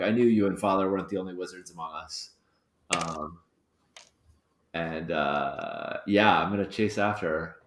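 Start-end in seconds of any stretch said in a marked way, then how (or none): 0.0-2.3 muttered under the breath to himself. A player speaks as his character John in a game, muttered under breath. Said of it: "he mutters under his breath".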